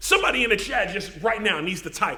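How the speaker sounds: plain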